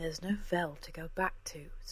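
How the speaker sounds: soft-spoken. Jem answers Cora's demand to go back to Vell, softly. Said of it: "said Jem softly".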